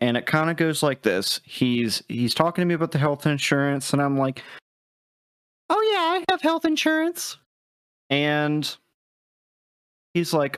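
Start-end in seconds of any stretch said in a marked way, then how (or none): 5.7-7.4 very high put-on woman's voice. Retelling a scam call to the others: imitating own put-on woman's voice. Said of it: "replying in a woman's voice".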